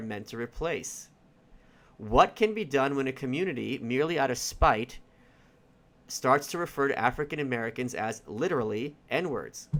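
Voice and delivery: ordinary delivery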